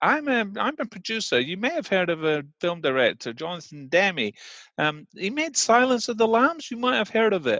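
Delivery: high acted American accent. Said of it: "it was American accent".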